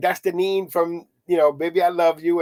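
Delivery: ordinary delivery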